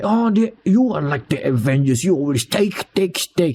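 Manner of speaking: badly faked Russian accent. Retelling a movie scene about the Avengers, doing Scarlet Witch in a fake Russian accent. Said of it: "in a Russian accent. I cannot do Russian accent. Fake Russian accent".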